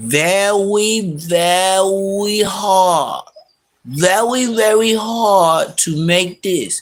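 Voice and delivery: very slow, drawn-out, cartoonish put-on voice. Talking about Bosco and Munchie, saying it like a cartoon character voice. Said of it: "I'm gonna say it like the cartoon character".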